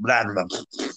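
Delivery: put-on sloppy, spitting cartoon creature voice. Showing the Tasmanian Devil's sloppy, spitting sound: sloppy spitting Tasmanian Devil impression. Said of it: "That's a very good impression".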